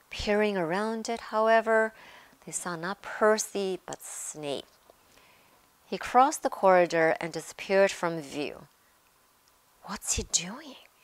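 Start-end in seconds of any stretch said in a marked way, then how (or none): 9.8-10.7 soft, hushed whisper. Harry, hiding behind a stone griffin with Ron, whispers after seeing Snape pass. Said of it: "Harry whispered".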